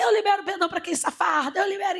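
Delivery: high-pitched yelling, shouted out loud. Retelling how a woman stood up in the room, imitating someone shouting. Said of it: "ela começou a gritar na sala".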